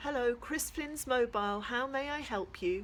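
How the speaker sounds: bright, cheery, chirpy voice. Answering the phone when the narrator calls asking for Dad, chirpy. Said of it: "a chirpy voice asks".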